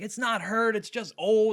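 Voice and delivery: irked, annoyed, dismissive, brushing-off tone. Retelling what a woman said about her dog, imitating a mad woman. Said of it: "she seemed mad".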